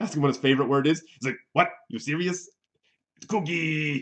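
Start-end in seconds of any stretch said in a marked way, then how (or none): 1.5-4.0 put-on puppet monster voice. Retelling an interview answer, doing a so-so Cookie Monster voice. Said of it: "my Cookie Monster impression is".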